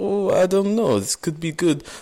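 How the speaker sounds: bad fake Russian accent. Voicing people coming back around to an idea, the speaker uses a horrible Russian accent. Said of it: "That was a horrible Russian".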